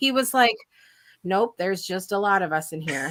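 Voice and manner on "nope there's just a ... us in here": put-on flat monotone, pitched much lower. Parent retelling their son's reply to someone asking about a party, imitating son's monotone. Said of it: "And it was this very monotone like thing".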